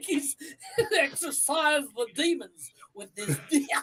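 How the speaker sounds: put-on preacher-style pulpit delivery and accent.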